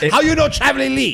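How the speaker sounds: put-on Chinese accent. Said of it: "with that little accent you're doing there".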